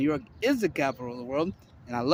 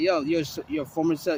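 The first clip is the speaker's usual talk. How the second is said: plain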